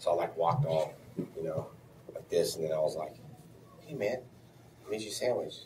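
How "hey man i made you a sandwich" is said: sly, too-innocent, suspicious, slightly high voice. Retelling handing someone a sandwich: imitating a suspicious tone. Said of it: "just like that, like, suspiciously".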